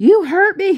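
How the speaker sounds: very high-pitched, shrill, loud screaming. Retelling a daughter screaming at her in public: imitating someone screaming. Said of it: "she's screaming at me like".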